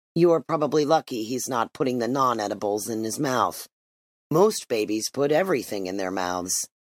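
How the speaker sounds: plain reading voice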